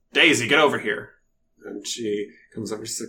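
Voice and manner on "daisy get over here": stern hobgoblin creature voice. Voicing a hobgoblin who calls Daisy over: voicing a stern hobgoblin. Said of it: "a stern and, like, wrinkly looking hobgoblin".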